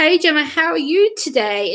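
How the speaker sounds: put-on stretched-out, drawling southern accent. Remembering a man she knew, imitating his southern drawl as he greets her. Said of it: "He had that southern drawl about him".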